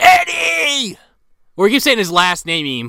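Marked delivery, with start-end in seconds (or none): 0.0-1.0 mock frantic scream, very high and drawn out. Retelling how Tim drove over to Eddie's, imitating Tim screaming. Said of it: "he's like screaming".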